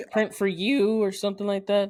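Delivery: cracking, breaking voice. Discussing a shirt website with another speaker, voice cracking. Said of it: "That voice crack".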